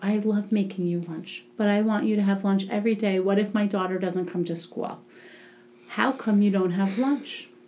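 put-on whispering voice. Retelling what was said into a little girl's ear: retelling a whisper. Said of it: "So I whispered in her ear".

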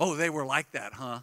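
mock sarcastic tone, put-on sarcasm. Retelling what the big sister said about them, as a retold sarcastic remark. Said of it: "All sarcastic".

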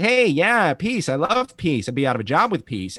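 high whine with swooping pitch. Imitating the voice actor's early Tony Stark lines: imitating whiny Tony Stark. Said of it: "he sounds, like, really whiny".

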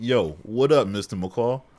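put-on loud, slow, heavy, drawn-out New York accent. Retelling how Miles greets Mr. McCall, in a New York accent. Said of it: "New York accent".

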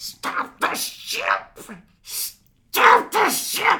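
very slow, loud, dragged-out screaming. Retelling a movie relapse scene: imitating someone screaming. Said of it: "he's screaming at the audio cassette".

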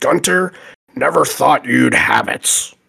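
rough-edged sportscaster voice, highlight-reel style. Announcing a requested episode with a punny nickname: Chris Berman style. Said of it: "this is a nod to him in some way".

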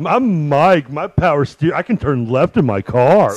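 mocking put-on voice. Mocking the other speaker about a spare tire: mocking impression of Mike. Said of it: "when you use that voice".

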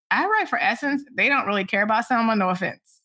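ordinary talk

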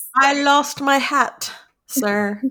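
very slow, fake British accent. Talking about Gettysburg ghosts, voicing one in a put-on British accent. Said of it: "I gave the Gettysburg people like a British accent".

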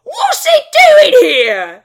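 very loud, shrill, swooping orc voice. Voicing orcs reacting to a commotion outside: orc voice. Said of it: "You hear them saying".

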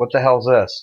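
ordinary talk, nothing marked

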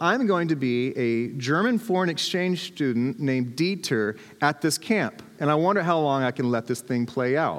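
ordinary talk

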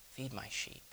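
quiet and tender. Answering a tearful man who has just declared his love, quiet and tender. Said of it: "Jesus said quietly and tenderly".

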